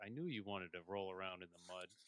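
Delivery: soft, very calm, cool, unruffled delivery. Retelling a book scene after a fight, imitating her saying it very calmly. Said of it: "very calmly".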